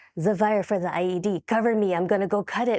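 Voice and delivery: imitated heavy Russian accent. Retelling a story about an ied, the speaker quotes the sergeant in a thick russian accent. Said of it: "he was Russian with a very, very thick accent".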